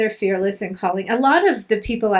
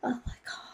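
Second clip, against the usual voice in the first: put-on very quiet, upset, appalled murmur in British accent. Imitating a hotel reviewer looking at a mattress: british accent. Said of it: "he's British".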